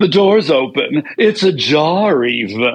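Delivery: slow, unhurried drawl with "ajar" stretched out. Performing a line after being asked to hear it: Samantha Jones voice. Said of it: "And that's pretty much Samantha".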